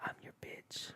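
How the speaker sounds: low whisper, right up close. Retelling what the barber said behind him: imitating a whisper. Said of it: "whispers in my ear".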